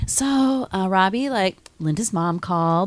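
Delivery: gentle, soft, slow, dragged-out delivery. Retelling how a woman softly broke news to a man: imitating a soft, drawn-out delivery. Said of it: "she really like, drags it out".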